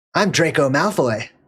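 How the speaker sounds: fake swaggering boy voice. Retelling a film scene to viewers: imitating Draco Malfoy, cocky. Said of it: "This confident, cocky little sucker".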